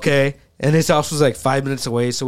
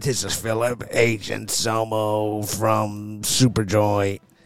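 deep, slow, hushed voice; 4 semitones lower, 5 dB quieter than usual. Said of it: "He was doing that impression the whole way home".

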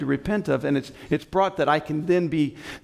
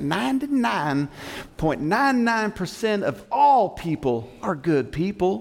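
put-on Texas accent with heavy twang; 4 semitones higher than usual. Quoting a gentleman in Texas named Joel, imitating Joel's Texas accent. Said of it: "I'm going to try to use that accent".

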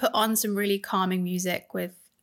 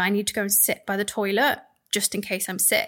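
ordinary talk

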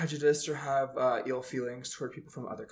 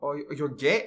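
terrible put-on German accent; 5 dB louder than usual. Retelling what a German guy asked, in a bad German accent. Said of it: "Don't try and do the accent because that was terrible".

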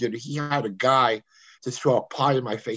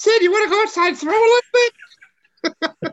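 very high, loud, squeaky voice; 9 dB louder than usual. Retelling how George Foster would ask Sid to play, use a high squeaky George Foster voice. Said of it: "George had that high squeaky voice".

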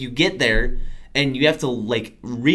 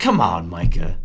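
mock, low, deeply disappointed, utterly let-down tone; 6 semitones lower, 4 dB louder than usual. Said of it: "Just in the most disappointed voice ever".

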